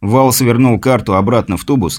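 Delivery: plain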